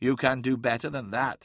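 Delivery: ordinary delivery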